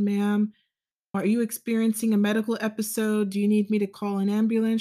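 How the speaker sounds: mock calm, put-on police officer voice. Speaker recounts a traffic stop where a woman yelled, imitating a calm police officer. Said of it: "The police officer stayed very calm".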